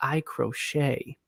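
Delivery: soft, hushed, secretive whisper. Retelling a woman's answer to a man's question, imitating her whisper. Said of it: "she whispered to him and said".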